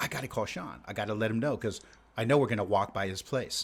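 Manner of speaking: plain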